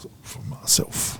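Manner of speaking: put-on whispered, breathy South Auckland accent on "South". Imitating how people from South Auckland say South: South Auckland way of saying South. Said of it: "when they say it, they're like".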